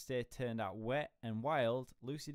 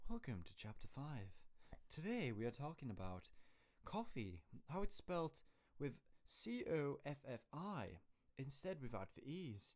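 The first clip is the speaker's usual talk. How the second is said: put-on, soft, very posh accent; 3 semitones higher, 8 dB quieter than usual. Streamer announcing the next chapter on stream, very posh accent. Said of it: "It's a very posh accent".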